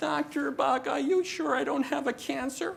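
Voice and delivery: very high, acted-out whiny voice. Doctor recalling a patient who always had doubts, in whiny patient voice. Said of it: "it's always the whiny voice".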